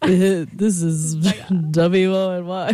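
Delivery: put-on radio announcer voice. Hosts trying out their intro, one puts on a radio voice. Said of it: "radio voice on".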